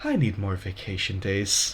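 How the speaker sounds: very quiet, low, hushed grumbling mutter. A woman mutters to herself as the listeners walk away, under her breath. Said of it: "muttering under her breath".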